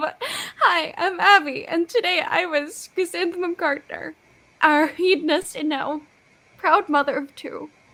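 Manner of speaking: voice near tears, just holding it together. Introducing herself to the table at season's end, holding back tears. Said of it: "I'm trying not to cry right now".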